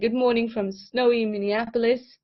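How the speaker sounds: ordinary delivery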